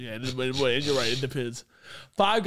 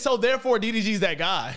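ordinary delivery

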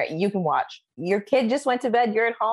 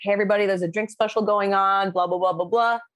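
quick, fast, rattled-off announcer-style blurt. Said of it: "blurt out a quick little something".

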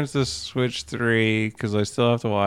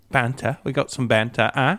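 bad put-on British accent. Mocking dialogue from bad British reality TV, in a bad British accent. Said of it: "I'm not good at it".

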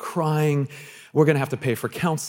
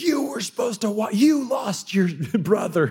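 yelling, higher; 7 semitones higher than usual. Retelling losing a child at the mall, blaming the other kids: imitating himself yelling. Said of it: "I start yelling at my other kids".

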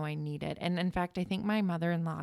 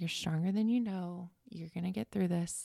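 mock whispering. Retelling what a nurse said while wheeling her out: imitating a whisper. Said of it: "she just kept whispering in my ear".

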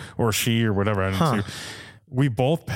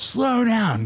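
put-on yelled shout, much higher pitch; 10 semitones higher than usual. Recounting someone yelling at the speaker while driving, retelling a yell. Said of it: "yells at me".

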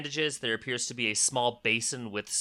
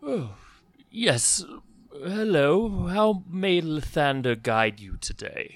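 put-on elderly priest character voice, pitched much higher; 5 semitones higher, 4 dB louder than usual. The narrator voices an elderly priest approaching the players, in an elderly priest voice. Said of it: "An elderly priest walks up to you".

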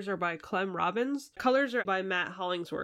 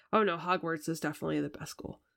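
put-on mutter under the breath; 2 semitones lower than usual. Retelling a film moment answering an American wizard's boast, muttering like Eddie Redmayne's character. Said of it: "says under his breath".

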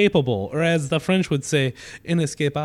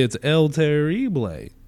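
put-on French accent on the phrase. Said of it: "As the French would say".

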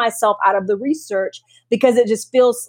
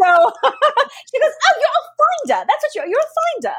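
put-on British accent, very high and swooping. Retelling what a woman said to them, in a put-on British accent. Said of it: "that's my British accent".

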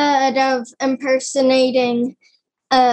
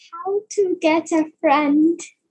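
feeble, weak, high-pitched tiny character voice; 5 semitones higher than usual. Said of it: "impression of, um, of a toe bone".

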